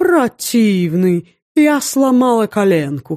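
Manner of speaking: thin, affected, mannered, high little voice. Finishing a comic bit for laughter from the next rooms, thin mannered voice. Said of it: "Тонким манерным голоском".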